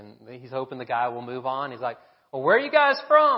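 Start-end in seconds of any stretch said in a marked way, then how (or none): 2.3-3.4 shrill, booming put-on Tennessee accent. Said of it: "With a good Tennessee accent".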